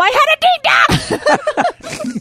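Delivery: mock very high, slow-stretched, drawn-out cry. Retelling flinching in the kitchen and blurting out: retelling a yell. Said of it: "I kinda yelled out at him".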